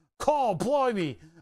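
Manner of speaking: put-on Australian accent. Showing how watching other makers' channels rubs off on them, put-on australian accent. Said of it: "I'll start bringing on an Australian accent".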